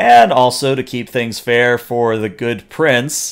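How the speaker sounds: extremely sarcastic delivery. Voicing a noblewoman announcing the duel's rules to the crowd: very sarcastic. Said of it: "she says that as sarcastically as possible".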